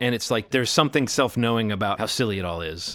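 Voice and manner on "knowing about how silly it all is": normal talking voice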